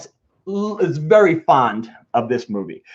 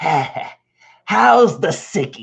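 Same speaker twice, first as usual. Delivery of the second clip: put-on old grandfather voice. Retelling the grandfather greeting the sick kid: Peter Falk impression. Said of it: "he goes like this".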